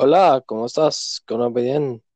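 mocking, exaggerated Spanish accent. Imitating how Spanish people speak, mocking them: mocking how Spanish people speak. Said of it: "listen how they speak".

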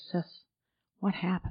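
gentle, soft, sweet whispered voice. Quoting what he said to the speaker, in a very soft and sweet voice. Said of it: "He said in this very soft and sweet voice".

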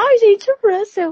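very high-pitched, loud woman's voice. Asked by the others to say George Russell in her voice: imitating her voice. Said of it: "é o George Russell com a voz dela".

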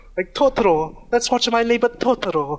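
put-on Italian accent. Retelling how a woman said it, the speaker imitates her Italian accent. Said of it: "she says it like this in her Italian".

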